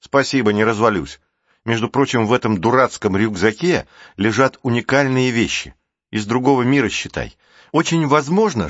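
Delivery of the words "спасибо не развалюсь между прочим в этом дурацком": ordinary delivery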